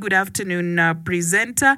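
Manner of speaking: normal talking voice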